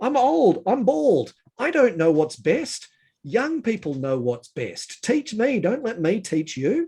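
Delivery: passionate, heartfelt outburst. Speaking to listeners and admitting it, getting a bit passionate. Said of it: "I'm getting a bit passionate".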